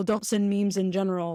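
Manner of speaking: normal talking voice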